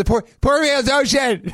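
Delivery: high-pitched put-on shouting. Recounting how a man screamed his line over constant traffic noise, retelling a scream over traffic. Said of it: "He's just screaming it over constant traffic noise".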